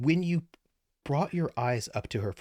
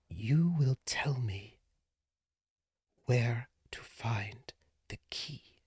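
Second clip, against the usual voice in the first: barely audible, hushed whisper. A narrator voices a woman whispering into a man's ear, barely audible whisper. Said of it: "you can barely hear her".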